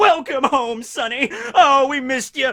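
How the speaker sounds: put-on very loud, high, brittle, frail old-man voice. Retelling a homecoming scene, voicing the mayor: imitating a brittle old man. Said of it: "he's this brittle old man".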